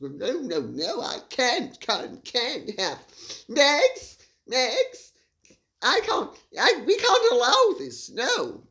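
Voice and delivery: put-on slow, halting, drawn-out mid-Atlantic accent, repeating words. Mocking the idea of anyone shouting at Harry: Prince Harry, mid-Atlantic accent. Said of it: "In my now mid-Atlantic accent".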